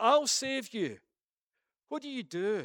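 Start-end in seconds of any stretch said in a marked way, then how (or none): 0.0-1.0 high, loud, slow shout. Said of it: "they shout".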